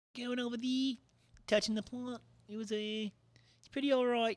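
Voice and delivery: put-on New Zealand accent. Talking to Kiwi listeners, in a put-on Kiwi accent. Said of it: "Tell me if I did your accent well".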